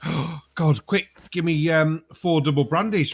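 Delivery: acted winded, huffing and puffing. Retelling a man who came into the bar, imitating someone huffing and puffing. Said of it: "he's looking all huffing and puffing".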